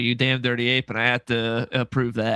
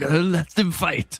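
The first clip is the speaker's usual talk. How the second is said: pitched-up put-on Japanese accent in English; 5 semitones higher than usual. Joking about a fight breaking out in a crowded line: [name] doing a Japanese accent. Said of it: "Just [name] doing the Japanese accent".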